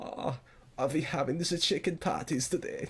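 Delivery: put-on German accent. Retelling how he repeated a man's question back to him, put-on German accent. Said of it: "I would do that voice with him".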